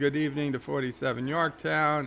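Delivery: ordinary delivery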